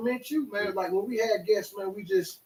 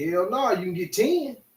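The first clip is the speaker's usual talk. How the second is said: ordinary talk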